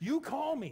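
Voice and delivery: acted forceful, very high-pitched, loud aggressive voice. Retelling a phone call warning someone to call first: retelling own warning aggressively. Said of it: "I'm saying it a little more aggressively than I did".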